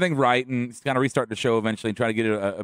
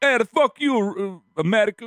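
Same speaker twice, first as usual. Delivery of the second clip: attempted Jamaican accent, much higher pitch; 11 semitones higher, 3 dB louder than usual. Imagining what Kofi from Jamaica would say to America, in an attempted Jamaican accent as Kofi. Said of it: "It was my attempt".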